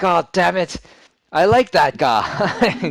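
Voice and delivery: very loud, high, enraged, furious demon shout. Storyteller voices the demon lord whose champion was just killed, Gershalu yelling in absolute anger. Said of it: "more like yells in absolute anger".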